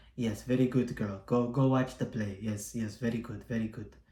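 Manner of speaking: put-on deep, laid-on Russian accent. Imagining how the ballet director from John Wick would sound: deep Russian accent. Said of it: "some deep European accent, some Russian accent".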